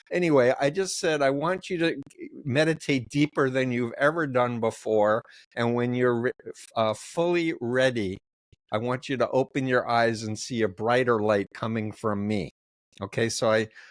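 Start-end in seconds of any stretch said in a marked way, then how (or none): none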